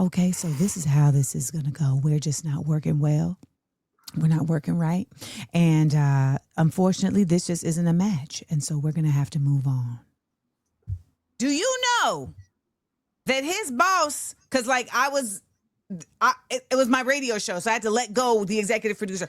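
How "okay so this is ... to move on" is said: put-on sweet gentle voice, lower pitch. Retelling firing someone while imitating Tabitha Brown. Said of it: "I put on my Tab mask and I said".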